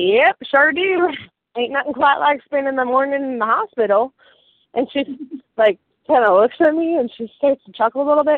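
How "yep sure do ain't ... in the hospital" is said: put-on American Southern accent. Retelling answering the lady at the hospital, in a Southern accent. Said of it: "Southern accents".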